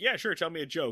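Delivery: ordinary talk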